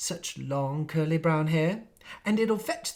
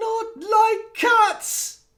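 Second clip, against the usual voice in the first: very high, piercing, shrill, loud, impassioned cry; 7 dB louder than usual. Narrator reading the frightened mouse crying out to the girl, in a shrill, passionate voice. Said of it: "cried the mouse in a shrill, passionate voice".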